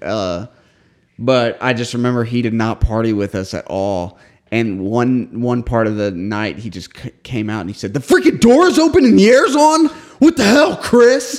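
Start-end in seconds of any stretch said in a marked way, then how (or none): 7.9-11.4 very high, annoyed, angry outburst. Retelling a party where the brother came out complaining: imitating someone angry. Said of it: "got all pissed off".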